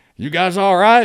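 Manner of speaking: put-on Southern accent, very loud and very high. Retelling how a soldier called out to him: imitating a Southern accent. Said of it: "I hear a Southern, um, uh, uh, accent".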